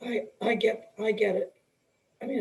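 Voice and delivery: choked-up voice catching and breaking with emotion. Recalling being called a coach's coach, the speaker pauses: choking up. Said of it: "I'm choking up".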